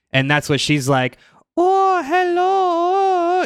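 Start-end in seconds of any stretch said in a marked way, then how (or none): 1.5-3.4 eerie, very high-pitched, drawn way out. Retelling how a vampire character talks on a show: imitating Drusilla's eerie voice. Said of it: "she has this voice throughout the whole thing".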